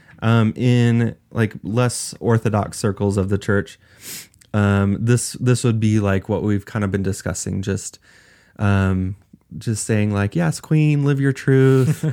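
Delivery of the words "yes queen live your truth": bad put-on camp voice, higher, louder.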